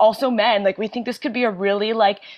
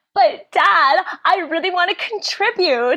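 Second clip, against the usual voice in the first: put-on pitched-up girl voice; 9 semitones higher than usual. Playing the daughter Tansy answering her dad, in Tansy's higher voice. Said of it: "in case you couldn't tell by my higher voice".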